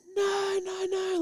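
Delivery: put-on very high-pitched sobbing, wailing, crying shriek. Parent retelling the older daughter's protest at leaving, imitating a crying, screaming daughter.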